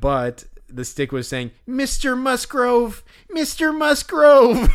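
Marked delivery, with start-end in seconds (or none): 1.7-4.7 put-on very high, very loud, whiny mewling child wail. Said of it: "that's exactly what he sounded like".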